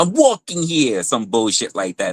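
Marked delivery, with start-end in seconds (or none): 0.0-1.0 mobster-style Boston Italian accent. Mocking what outsiders expect New Yorkers to say: mock Boston Italian mob accent. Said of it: "that sounds like some Boston Italian shit".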